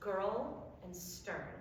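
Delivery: put-on "girl" and "stern" said slowly, drawn out.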